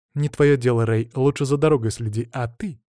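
ordinary delivery

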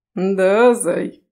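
playful, teasing mimicking voice. A husband teasingly repeats his wife's line back at her; mocking imitation of his wife. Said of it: "передразнивает муж".

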